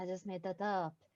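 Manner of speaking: very quiet half-whispered aside. Speaker recalls secretly confessing to Valara that the library was invented; retelling a half-whisper. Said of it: "then I just whispered to Valara".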